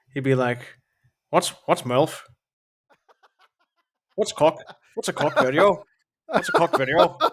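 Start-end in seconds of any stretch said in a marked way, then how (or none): 1.2-7.1 attempted Northern Irish accent, high and swooping. Imagining how a man would react to being shown an iPad, in a Northern Ireland accent. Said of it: "I'm trying to do a Northern Ireland accent".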